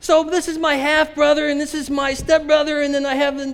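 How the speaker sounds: mock scream, loud shouting. Retelling what a woman said while a band played loudly, retelling a scream in the ear. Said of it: "she's screaming in my ear".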